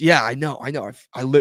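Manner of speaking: put-on irritated voice. Retelling a quarrel over ketchup on a hot dog: imitating Joey getting mad. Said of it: "he's getting mad at me".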